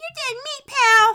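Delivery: put-on piercing, shrill, very high, very loud little-girl shout. Recalling what they said to a kid they kicked, in a little girl voice. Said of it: "With my little girl voice".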